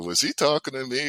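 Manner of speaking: ordinary talk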